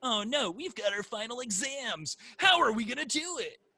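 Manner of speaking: voice like an anime character. Describing a show's school episode, voicing its characters, anime character voice. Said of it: "That's a very anime voice".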